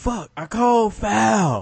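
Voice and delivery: mock very slow, high, drawn-out yell. Retelling calling a foul in a game, retelling a yell. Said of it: "yelled it".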